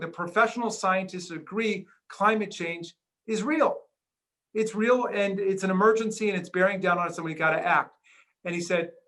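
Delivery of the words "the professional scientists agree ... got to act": usual speaking voice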